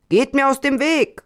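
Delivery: loud insistent high yell. A beggar forces his way through a crowd, shouting. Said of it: "dabei schrie".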